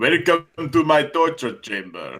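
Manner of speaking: fake Russian accent, put on. Joking about Russian accents in a campaign: put-on Russian accent. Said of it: "I do appreciate the accents".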